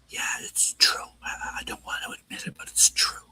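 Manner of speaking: soft, hushed, breathy whispered voice. Retelling what someone reluctantly admitted: retold whisper. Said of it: "So it was kind of whispers like".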